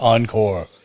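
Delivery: very large, deep voice. Voicing someone in a crowd calling for more: very large, deep voice. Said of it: "in a very large, deep voice".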